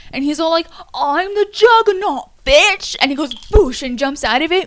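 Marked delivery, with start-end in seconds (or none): 1.0-3.0 put-on loud, high, slow, drawn-out Australian accent. Retelling a scene where the Juggernaut gets stuck: Juggernaut's Australian accent. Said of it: "he's got this Australian accent".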